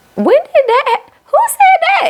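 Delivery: very high voice, pushed way up. Reacting to what she said, speaker asks in a Porsha Williams voice. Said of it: "in my Portia voice".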